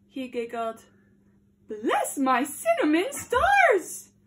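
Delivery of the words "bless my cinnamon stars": very high, very loud, swooping outcry. Chasing a runaway gingerbread man around the kitchen, a woman cries out. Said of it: "cried Mrs. Baker".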